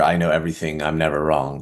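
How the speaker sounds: ordinary talk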